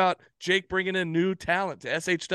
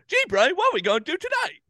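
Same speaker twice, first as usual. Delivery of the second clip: very high cartoon mouse voice with swooping pitch; 11 semitones higher, 4 dB louder than usual. Recalling the 90s cartoon Pinky and the Brain on a podcast, doing Pinky voice. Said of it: "Got his voice perfect".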